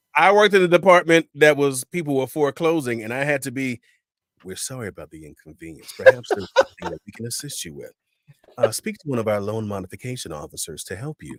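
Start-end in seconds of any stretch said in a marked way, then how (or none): 4.4-11.4 automated, recorded phone-prompt voice. Recalling work in a foreclosure department, speak like an automated phone prompt. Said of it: "they thought I was the prompt".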